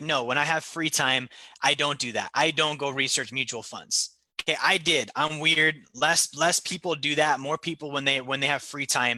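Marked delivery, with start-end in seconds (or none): none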